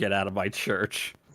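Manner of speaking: ordinary talk, nothing marked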